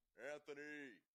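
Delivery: level one-note call. Retelling how a friend's police officer dad called him home: imitating a monotone call from down the street. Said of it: "It was just that monotone".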